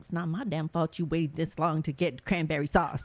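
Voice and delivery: imitated muttering under breath. Retelling what a daughter said about work: imitating muttering under her breath. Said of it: "under her breath".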